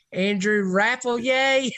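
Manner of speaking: fake Southern accent, twangy. Saying a recruit's name for the other speaker: put-on Southern twang. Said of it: "Southern twang".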